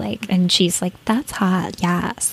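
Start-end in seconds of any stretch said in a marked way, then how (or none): 1.0-2.3 over-the-top dumb, ditzy voice. Recalling a reality show scene, imitating Paris Hilton's exaggerated ditzy voice. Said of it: "exaggerated, ditzy voice".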